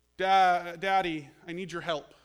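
put-on tiny small child's voice. Father retelling his daughter calling him from her bedroom upstairs, imitating a tiny little voice. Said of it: "I hear this little tiny voice".

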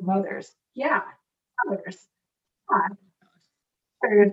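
proud, looping, repeated over and over. Retelling a TV scene where Chandler keeps repeating a word: imitating proud Chandler. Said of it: "so proud that he just keeps repeating".

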